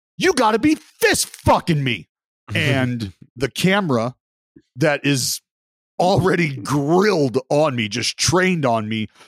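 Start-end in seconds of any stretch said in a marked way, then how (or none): 0.2-2.1 very loud, shrill yell swinging wildly in pitch. Retelling yelling after a man shook hands and walked off; retelling a very loud yell. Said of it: "very loudly yelled".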